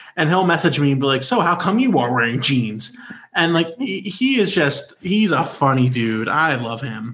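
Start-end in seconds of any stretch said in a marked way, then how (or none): 1.3-3.0 play-acted cheeky, sassy teasing tone. Retelling a friend's message about wearing jeans: imitating Brad, sassy. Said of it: "he is one of the sassiest people".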